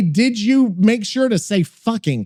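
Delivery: plain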